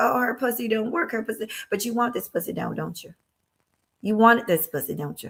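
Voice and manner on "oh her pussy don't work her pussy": put-on high, mild, half-yelled outburst. Acting out Warren screaming at the top of his lungs, mock-screaming as Warren. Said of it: "screaming at the top of his lungs".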